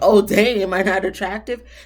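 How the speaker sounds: playful kidding tone. Showing how to ask without sounding offended: light, joking tone. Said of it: "You say it more like in a joking type of way".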